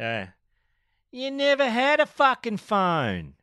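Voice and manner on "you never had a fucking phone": very high, slow, dragged-out junkie drawl. Showing off a new entry phrase, in a junkie voice. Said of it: "a new entry phrase for my junkie voice".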